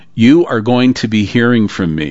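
ordinary delivery

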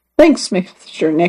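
ordinary delivery, nothing marked

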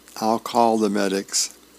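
ordinary delivery

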